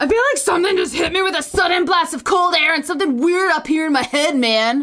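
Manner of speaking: strained, throaty, throat-straining put-on voice. Quoting a friend directly, imitating Zach's voice. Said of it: "This makes my throat hurt talking like Zach".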